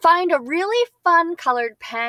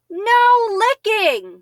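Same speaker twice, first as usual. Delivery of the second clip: high, excited, emotional exclaimed shout; 6 semitones higher, 3 dB louder than usual. Showing learners how to read an exclamation: excited shout. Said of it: "I showed a lot of emotion".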